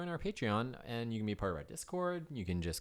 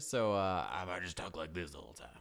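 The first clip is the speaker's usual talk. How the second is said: rough voice, lower; 5 semitones lower than usual. After an hour-long recording session, a podcast co-host speaks in a rough voice. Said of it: "like rough voice, and I did that for like an hour".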